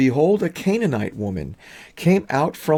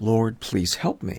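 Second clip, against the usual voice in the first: mock pleading voice, lower; 3 semitones lower than usual. Retelling how a woman bowed before Jesus: imitating a woman begging. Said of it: "and she begs".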